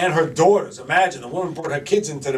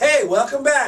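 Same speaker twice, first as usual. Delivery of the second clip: bright, excited, very high-pitched voice; 9 semitones higher than usual. Coaching a host to open with more excitement, the speaker demonstrates: excited greeting.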